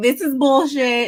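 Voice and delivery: put-on Baltimore accent, high and loud. Retelling what Kay said about the phone, imitating Kay's Baltimore accent. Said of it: "her Baltimore accent".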